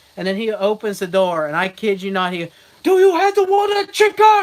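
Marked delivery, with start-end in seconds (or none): 2.9-4.5 livid, shrill shriek, pitched way up, furious. Speaker retells a man from the family business yelling at them, imitating an angry shout. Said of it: "Like as loud, pissed off as he could be".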